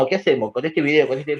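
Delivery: plain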